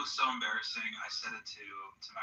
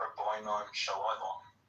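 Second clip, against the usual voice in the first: put-on, imitated English accent. Retelling how another person started saying the greeting: John's English-accent way. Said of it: "like the English accent way".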